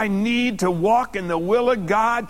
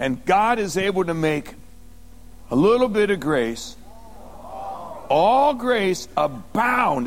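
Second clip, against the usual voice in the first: very slow, deliberate, word-by-word phrasing; 3 semitones lower than usual. Telling listeners to take this in, the speaker says it slowly. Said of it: "I'm going to say that slow".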